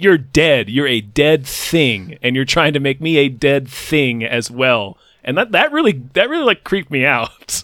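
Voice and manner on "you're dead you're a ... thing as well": ordinary talk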